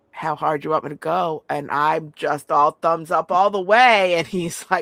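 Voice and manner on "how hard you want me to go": whispered speech. Acting out what a man whispered to the speaker, retelling a whisper. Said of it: "he whispers".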